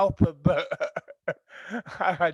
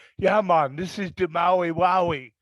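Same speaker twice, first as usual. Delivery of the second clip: put-on Jamaican accent on the whole line; 4 dB louder than usual. Speaker retelling what people in Hawaii said when handing over weed, Jamaican accent. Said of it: "why they had a Jamaican accent".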